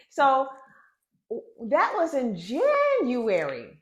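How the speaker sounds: frustrated voice rising high and loud.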